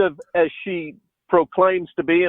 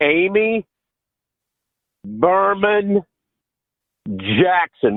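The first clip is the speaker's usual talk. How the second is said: each of three words set apart by long pauses. Showing how her name must be said: long pauses between Amy, Berman, Jackson. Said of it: "you got to say it like this: ... We need more of a pregnant pause in between the three names".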